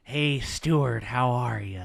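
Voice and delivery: very slow, drawn-out words. Repeating the line on request: Jack Nicholson impression. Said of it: "Now he's really doing Jack Nicholson".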